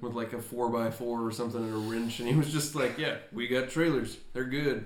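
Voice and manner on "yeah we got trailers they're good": mock deadpan delivery. Retelling what a guy with trailers said, imitating a deadpan guy. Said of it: "just a very deadpan".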